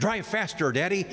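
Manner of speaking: high, mild put-on yell. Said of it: "she yells".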